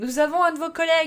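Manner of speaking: quavering shout, very high-pitched and loud. First-person narrator calls out to a wounded man's colleagues in a shaky shout. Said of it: "je crie d'une voix chevrotante".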